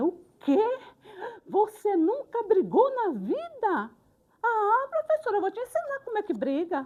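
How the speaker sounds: high, loud, indignant, disappointed outburst in disbelief. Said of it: "muito decepcionada comigo".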